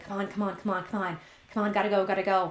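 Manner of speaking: quiet muttering under the breath. Retelling waiting impatiently in a line: muttering under breath. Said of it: "under my breath".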